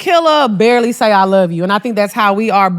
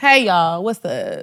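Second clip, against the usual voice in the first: mock snooty, stuck-up, haughty tone; 4 semitones lower, 5 dB quieter than usual. Imitating a friend walking in with her nose in the air: stuck-up greeting. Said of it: "with your nose in the air".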